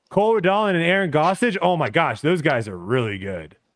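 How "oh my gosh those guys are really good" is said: enthusiastic tone laced with sarcasm. Reading out team pairings to the others: sarcastic praise. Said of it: "I'm sensing a bit of sarcasm from [name]".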